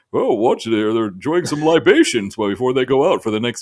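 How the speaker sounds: put-on old man voice in narrator style. Recalling the old Cheaters show, doing the old guy narrator voice. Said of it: "the old guy voice".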